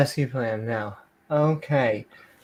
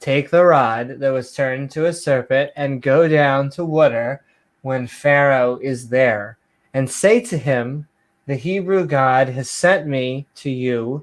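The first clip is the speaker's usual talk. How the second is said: plain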